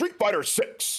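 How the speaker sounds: very high, game-announcer style callout. Quoting the announcer from the Street Fighter Six trailer: Street Fighter announcer voice. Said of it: "Kinda says it like that".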